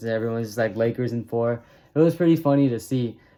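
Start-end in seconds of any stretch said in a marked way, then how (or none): none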